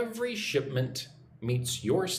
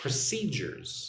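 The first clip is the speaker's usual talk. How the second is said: procedures with the -ce- syllable stressed. Teaching the three-syllable word procedures: stress on second syllable of procedures. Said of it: "Put the emphasis or the stress on the second syllable".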